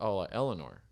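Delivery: ordinary delivery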